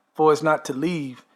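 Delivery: normal talking voice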